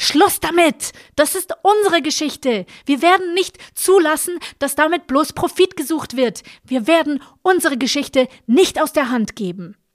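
very high, quavering, trembling outcry. Narrator voicing a woman's outburst after two figures are pushed away, trembling shout. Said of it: "mit bebender Stimme rief".

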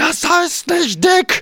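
play-acted, very high-pitched yell. Retelling how someone leaned over the counter at the speaker, retelling a yell. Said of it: "schreit mich an und sagt".

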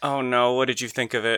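glum, downcast, depressed, dejected voice. A podcast co-host asks the other what they thought of a game, sounding depressed. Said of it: "I don't like how you sound depressed about it".

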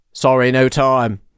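loose, put-on British accent. Retelling what a man said as he buzzed past, in a kind of british accent. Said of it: "in like kind of a British accent".

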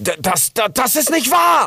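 very high, shrill, drawn-out furious scream. Rix, told that it is all his fault, denies it; angry scream. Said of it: "schrie Rix und ging nun wütend auf den Busch los".

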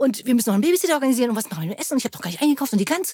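rushed, fast, out-of-breath, breathless rambling. Acting out fast talking and racing thoughts: fast, breathless rambling. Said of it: "Des schnellen Redens und Denkens".

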